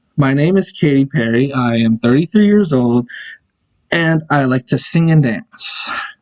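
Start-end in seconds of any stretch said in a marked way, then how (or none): none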